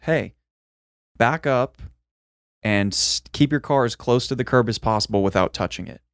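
ordinary talk

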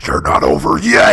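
loud, drawn-out, taunting possessed voice. Retelling a theme park ride moment: imitating a possessed ride figure. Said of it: "she gets possessed by the mummy and the glass breaks and goes".

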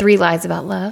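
speaking romantically. Podcast host announcing the episode title, in a romantic voice. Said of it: "You said that like with your romantic voice".

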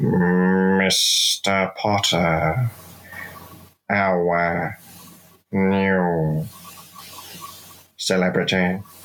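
nasal put-on character voice. Trying an impression for the others: Snape impression. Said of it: "I'll try and do Snape for you".

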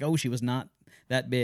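normal talking voice

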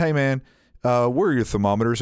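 ordinary talk, nothing marked

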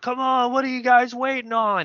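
very high yell, sounding far away. Retelling how people down the river yelled at the speaker: imitating people yelling from downriver. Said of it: "they're like yelling at me".

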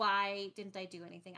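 ordinary delivery

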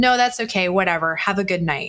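very annoyed, irritated, fed-up tone. Retelling a date's text-like reply to her: imitating an annoyed tone. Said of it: "he said it in a very annoyed way".

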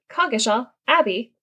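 like a GPS navigation voice. Pronouncing the abbey's name in conversation, sounding like a GPS. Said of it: "I sounded like a GPS".

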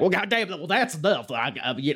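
very high, cartoonish voice. Retelling a referee's reaction in a match: imitating Earl sounding like A J Styles. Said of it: "and then Earl's like".

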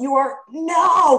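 mock very high, loud screaming outburst. Retelling a reaction to callers on a radio show: imitating own screaming. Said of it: "I was literally screaming at the radio".

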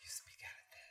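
airy, breathy, very quiet whisper. Trying out a whisper after being told how to whisper: whispering. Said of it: "There you go".

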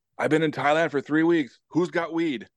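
mock, loud, booming big-man voice, pitched high. Retelling a huge guy's first words as he walks in; imitating a loud booming voice. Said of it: "The first thing he says in his loud voice".

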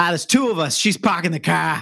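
put-on Boston accent. Retelling people being asked their party size, quoting a woman's answer: imitating a Boston accent.

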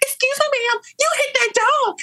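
put-on woman yelling. Retelling how a woman followed mom down the street: imitating a woman yelling.

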